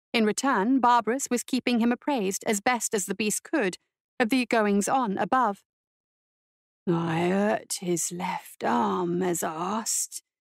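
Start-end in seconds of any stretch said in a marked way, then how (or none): 6.8-10.2 deep, low, guttural voice, dragged out very slowly. A narrator reads Barbaros reporting back as asked: guttural Barbaros voice. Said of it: "The voice behind her was guttural and unpracticed".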